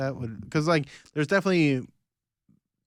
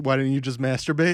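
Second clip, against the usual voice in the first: ordinary talk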